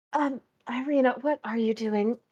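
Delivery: hushed half-whispered voice. Waking up to see Irina listening at the wall: half-whisper. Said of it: "I guess whisper".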